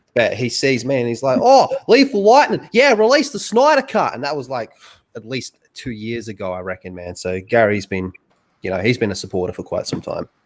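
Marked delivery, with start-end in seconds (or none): 1.4-4.1 terrible put-on Australian accent, very high-pitched. Guest recalls a streamer greeting him on stream: [name]'s bad Australian impression. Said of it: "really bad Australian impression".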